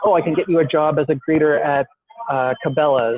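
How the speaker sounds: plain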